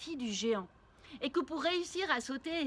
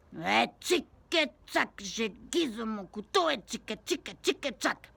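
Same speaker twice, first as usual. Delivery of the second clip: slow, cross, irritated, annoyed giant voice; 3 semitones lower, 3 dB louder than usual. Storyteller reading a tale aloud, voicing the giant: annoyed giant voice. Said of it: "Un géant qui a les pieds dans le sable et la tête dans les nuages. / Un géant qui a les pieds dans le sable et la tête dans les nuages. / le géant est un peu énervé".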